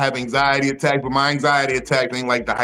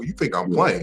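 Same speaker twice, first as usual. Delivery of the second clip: prickly, indignant, petty and offended tone; 4 semitones lower than usual. Acting out the inner voice behind a petty reaction: petty offended inner voice. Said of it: "that's what that voice is usually about".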